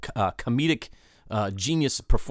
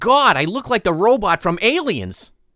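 light, pitched-up, frivolous, flippant throwaway delivery; 8 semitones higher, 4 dB louder than usual. Playing a movie-quote guessing game, speaker delivers a quote in a mock-frivolous way. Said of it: "From the frivolity that you delivered that line".

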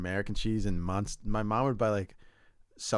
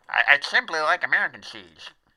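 put-on younger voice, higher and louder; 6 semitones higher, 5 dB louder than usual. Asking someone whether they liked cheese when young, doing the young Squeezer impression. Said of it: "doing the young squeezer".

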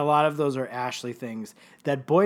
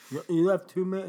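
put-on lispy voice, much higher pitch; 5 semitones higher than usual. Recalling a scene where Spinner answers a question, doing a lispy Spinner impression. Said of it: "his tongue is two sizes too big for his mouth".

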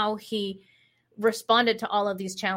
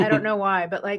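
ordinary talk, nothing marked

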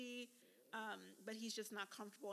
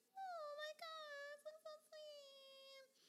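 very high, squeaky, slow, sweet, drawn-out voice; 5 dB quieter than usual. Recapping her last date with Justin among sunflowers, in [name]'s high-pitched voice. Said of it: "[name] is in her high-pitched voice".

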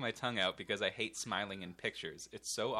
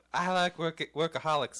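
put-on girlish voice, much higher; 7 semitones higher, 9 dB louder than usual. Asked to try a girl's voice, the speaker repeats a line in a put-on girl's voice. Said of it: "now you had a higher pitch".

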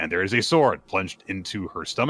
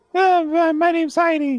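put-on little girl voice, much higher, louder; 4 dB louder than usual. Retelling a story, speaking as the little girl Heidi in a little girl voice. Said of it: "This is my little girl voice".

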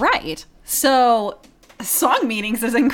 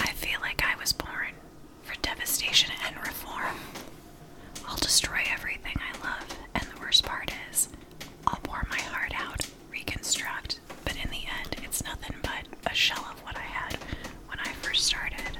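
soft ASMR whisper, higher and quieter; 12 dB quieter than usual. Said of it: "when you're whispering, doing your A S M R thing".

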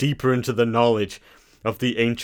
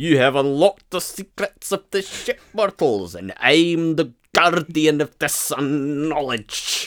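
put-on voice with a Scottish accent; 4 semitones higher than usual. Voicing a holographic guardian addressing mortals, in a Scottish accent. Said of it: "Why is he Scottish?".

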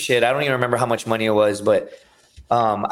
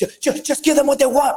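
mock frantic, very high-pitched, stammering, panicked voice. Retelling a police stop, friend begs to pay: imitating panicked friend. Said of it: "But he's panicking".

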